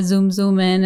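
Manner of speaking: ordinary talk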